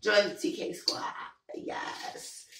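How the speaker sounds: harsh, hoarse, cracking sick voice. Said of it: "my voice is kinda harsh because I'm sick".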